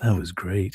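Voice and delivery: relaxed, chilled-out, easygoing, loose, laid-back delivery. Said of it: "That's why he's so laid back".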